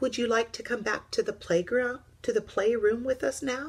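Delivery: friendly, kindly tone with lifted pitch. Little Bear speaks to Old Bear, who has been lonely, kindly. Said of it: "said Little Bear kindly".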